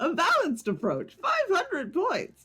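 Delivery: pitch rises way up and swoops around. A gamer scores a shrine like a photo rating, in the New Pokémon Snap professor voice. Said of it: "doing the voice of like um new Pokemon Snap professor".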